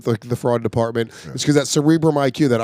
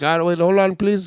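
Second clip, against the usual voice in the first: strong, thick, heavy put-on Indian accent; 4 semitones higher than usual. Speaker recounts having to re-explain something to a man, quoting him: thick Indian accent. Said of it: "the thickest Indian accent".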